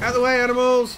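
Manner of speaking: high-pitched, loud yell.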